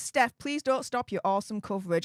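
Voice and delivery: normal talking voice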